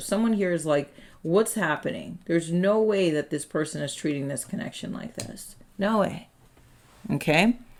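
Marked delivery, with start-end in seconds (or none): none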